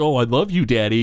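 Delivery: mock voice, mocking tone. Retelling a scene with another family, imitating Homer's condescending mockery. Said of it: "Homer's like condescendingly like".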